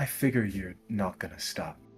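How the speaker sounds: low, hushed half-whisper, barely breathed out. Retelling what a woman half-whispered to Madeline: half-whispering. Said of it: "as she whispers".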